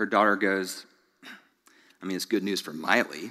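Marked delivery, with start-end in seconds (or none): 2.0-3.3 mock muttering under the breath, quieter and lower. Retelling what a daughter said in the back seat, imitating a mutter under her breath. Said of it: "And then under her breath".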